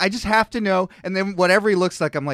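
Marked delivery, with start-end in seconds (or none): none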